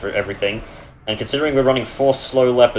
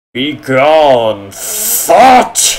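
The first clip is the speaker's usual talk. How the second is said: very loud, swooping angry bellow, "gone" stretched; 3 semitones higher, 8 dB louder than usual. Speaker redoes a phrase so someone can clip it: angry voice. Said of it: "That's my uh, angry voice".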